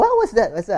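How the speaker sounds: baffled, high, loud, startled delivery.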